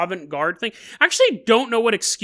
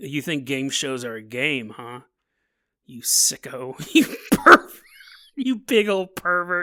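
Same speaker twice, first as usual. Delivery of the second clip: mock very low, slow, dark, ominous, menacing voice; 7 semitones lower than usual. Acting out a sudden dark turn while staring someone down: menacing, dark accusation. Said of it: "dark clouds come over and my face gets all overcast".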